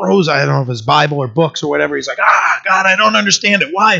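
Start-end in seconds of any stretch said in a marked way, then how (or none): 2.2-4.0 mock fed-up, frustrated, exasperated outcry. Retelling a man throwing his books in frustration: imitating Chuck Smith, frustrated. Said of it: "he gets really frustrated".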